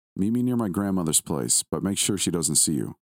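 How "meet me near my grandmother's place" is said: usual speaking voice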